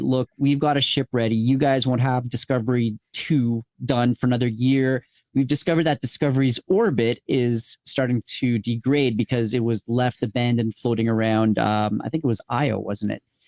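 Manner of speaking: ordinary talk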